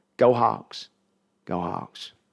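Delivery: put-on slow, drawn-out, swooping, slight Oklahoma accent. Imagining the Hall of Famer saying the team cheer: Steve Largent, slight Oklahoma accent. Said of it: "he's got the little bit of Oklahoma accent".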